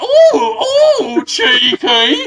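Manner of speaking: put-on western frontier accent. Acting out a woman in a saloon fleeing a cowboy: Wild West accent. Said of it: "in that kind of Wild West accent".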